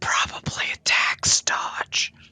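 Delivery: hushed whisper. Speaking privately into his ear about the place, whispering. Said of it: "I whisper in his ear".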